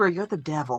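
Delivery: very low, close, hushed, leaning-in half-whisper. A player's character leans in close to another character, half-whispering. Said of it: "lean in and whisper".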